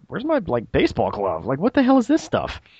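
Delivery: surprised, let-down disbelief, high, swooping, baffled dismay. Retelling their past reaction to unfamiliar technology, acting out surprised disappointment. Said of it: "i was just very surprised and a little disappointed".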